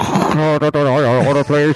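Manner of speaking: drive-thru worker voice, as through a speaker. Telling a story about a drive-thru, imitating the girl taking the order. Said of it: "That's a pretty good impression".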